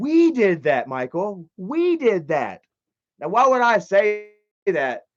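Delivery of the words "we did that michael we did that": voice full of shock, stunned. Retelling own past words caught on video: imitating own shocked tone. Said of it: "It sounds like there's a shock in my voice".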